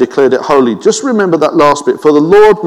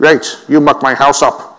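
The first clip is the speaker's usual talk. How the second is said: imitated Northern Irish accent. Recalling a feared voice from the 1980s and 1990s: put-on Northern Irish accent. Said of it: "that Northern Irish accent has a certain fear".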